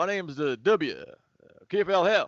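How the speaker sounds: put-on very slow, drawn-out Southern accent. Imagining how a famous politician would greet in Arabic: George W. Bush impression. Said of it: "Imagine, you know, George W. Bush".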